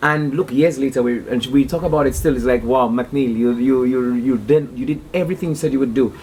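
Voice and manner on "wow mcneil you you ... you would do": ordinary talk, nothing marked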